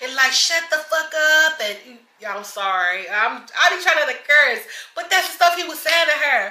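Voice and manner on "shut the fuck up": mock man's voice, yelling and cussing loudly. Retelling how he cussed her out in the car: imitating a man yelling and cussing. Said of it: "He was just so loud and cussing her out".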